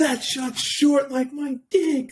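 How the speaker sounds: put-on shouting. Retelling a golf partner's outburst after a bad shot: imitating someone shouting. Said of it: "He shouts at the top of his lungs".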